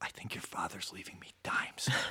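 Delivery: almost whispering, barely voiced, very quiet. Retelling a phone call from the mother: imitating someone almost whispering. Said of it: "kind of almost whispering and says".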